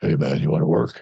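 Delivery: pleasant dropped low voice. Retelling a friend's invitation to work together, imitating Mark's deep voice. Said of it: "he had that really nice, deep voice".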